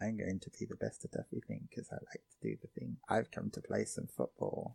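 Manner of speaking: creepy, eerie, barely audible hushed whisper. On Discord, describing how Ken talks: imitating Ken's quiet creepy voice. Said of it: "You're speaking so quietly, Discord cuts you off".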